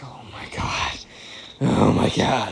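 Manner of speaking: aghast, breathless, unvoiced whisper under the breath.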